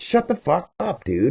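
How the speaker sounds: high-pitched, angry, furious snap.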